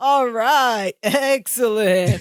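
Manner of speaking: put-on California surfer accent. Retelling a scene where a man is welcomed into an apartment, Bronson Pinchot surfer-dude voice. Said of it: "this like California dude bro accent".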